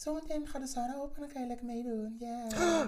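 high-pitched voice.

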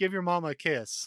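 calling out loudly. Retelling what a wrestler's mom said to him: imitating Trent's mom. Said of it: "She goes".

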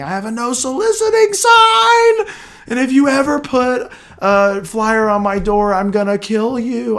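loud, high-pitched screaming. A call center worker retelling late-night callers: imitating a screaming caller. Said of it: "call screaming at me saying".

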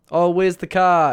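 put-on loud, high Australian accent. Retelling a comedy bit contrasting Australians and New Zealanders, in an Australian accent. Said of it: "Australians are kind of like".

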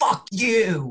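acted excited yell. Retelling yelling at a Rangers fan cousin: retelling own yell. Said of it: "I was going nuts".

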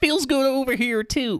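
goofy cartoon slacker voice, very high and loud. During a skit about poop, a line slips into Shaggy voice. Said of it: "almost came out like Shaggy".

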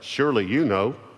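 put-on sarcastic tone. Reading aloud God's questions to Job: voicing God sarcastically. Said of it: "listen to the sarcasm".

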